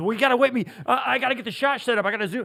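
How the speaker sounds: loud, high-pitched fussing voice. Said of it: "he goes".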